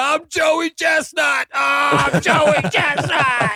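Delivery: mock very slow, high, drawn-out scream between retches. Acting out an eating contestant throwing up behind the building: acting out screaming while throwing up. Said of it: "And you're just screaming".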